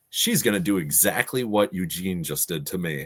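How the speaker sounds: usual speaking voice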